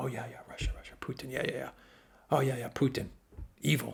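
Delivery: play-acted, derisive, sarcastic parroting in chorus voice. Acting out how the media would answer a leader blaming russia: sarcastic mocking imitation of the media. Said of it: "And then the media will go".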